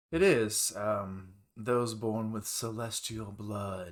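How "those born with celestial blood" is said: slow, very mocking delivery. Voicing a character answering which race it needs: very mocking tone. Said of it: "a very mocking tone".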